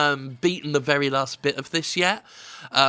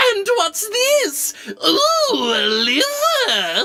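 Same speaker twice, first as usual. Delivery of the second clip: very high, swooping demon voice, loud, liver stretched out; 5 dB louder than usual. Describing a returning demon character, the speaker quotes his line: Guildenstern demon voice. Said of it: "Guildenstern still goes".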